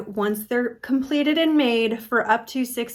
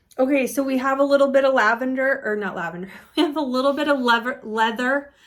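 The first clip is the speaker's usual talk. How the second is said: usual speaking voice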